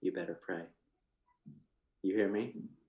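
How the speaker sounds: menacing, very low, quiet, threatening voice. On a phone call, warning Therese, threatening. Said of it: "that just sounded really threatening".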